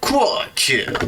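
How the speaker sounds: high-pitched video game kill announcer call. After a kill in the game, the speaker does a Halo announcer impression. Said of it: "That was my best Halo announcer impression".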